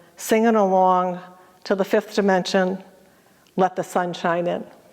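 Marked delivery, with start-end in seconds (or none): none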